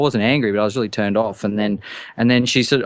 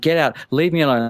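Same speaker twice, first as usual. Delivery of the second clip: mock panicked pleading, faster pace; 3 semitones higher than usual. Recounting a woman following them to the doorway, retelling a panicked plea. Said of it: "like complete panic attack".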